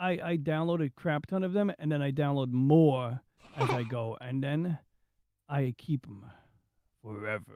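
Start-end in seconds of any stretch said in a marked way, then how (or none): 5.5-7.6 very deep, low, hushed cartoon villain murmur. Describing downloading and keeping ROMs, in a cartoon villain voice. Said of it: "sounded like uh, some kind of uh, cartoon villain".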